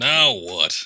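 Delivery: fed-up, annoyed, very loud outburst. Repeating the other speaker's words back, imitating an annoyed tone. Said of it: "You sound so annoyed".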